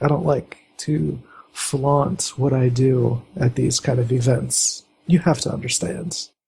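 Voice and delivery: voice dropped down and kept low. Game master voices a woman explaining herself to the player's character: lowered voice. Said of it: "She kind of lowers her voice".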